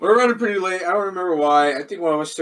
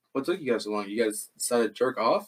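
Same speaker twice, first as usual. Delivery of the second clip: very low, hushed, quiet mutter; 7 semitones lower, 7 dB quieter than usual. Recalling what a man said to the speaker's group, retelling a quiet remark. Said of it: "he just like says like really quietly".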